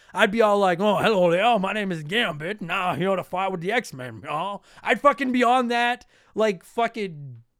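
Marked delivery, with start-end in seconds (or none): 0.8-4.7 bad cartoon character voice. Speaker imagines being asked to voice a character in an Xbox game, shitty Gambit voice. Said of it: "we hear you do a great shitty voice".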